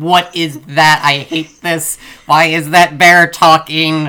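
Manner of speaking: put-on, very loud, high, drawn-out fearful shouting. Retelling how a friend watched a movie, imitating someone yelling in fear. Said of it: "cowering in the corner, yelling".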